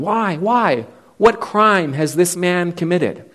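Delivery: feeble, weak voice, lifted high in pitch. Retelling a crowd demanding a crucifixion, retelling Pilate's feeble protest. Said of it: "Pilate feebly tries to interrupt them".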